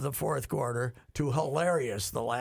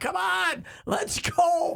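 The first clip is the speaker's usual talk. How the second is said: mock screaming, higher and louder; 5 dB louder than usual. Retelling a long review in a thirty-point game: imitating someone screaming. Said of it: "he's just screaming at him".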